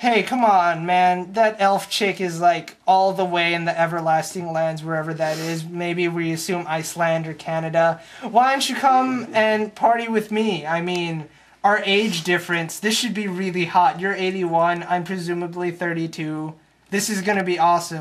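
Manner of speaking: ordinary talk, nothing marked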